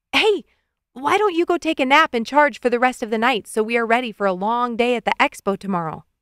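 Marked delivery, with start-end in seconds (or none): none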